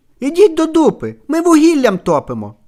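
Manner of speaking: put-on acted small girl yelling, high-pitched. Telling a joke, voicing the little girl answering the door, retelling a little girl's shout. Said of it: "дівчинка кричить".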